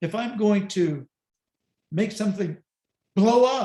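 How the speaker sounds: "blow up" punched with high, loud emphasis.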